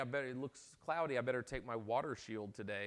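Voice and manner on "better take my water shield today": ordinary talk, nothing marked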